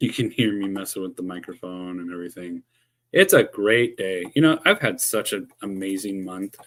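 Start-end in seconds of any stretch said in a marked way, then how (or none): 3.1-6.6 loud, heavily sarcastic, feigned delight and cheer. Speaker talks to viewers while fixing the microphone: sarcastic. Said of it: "I'm being very sarcastic right now".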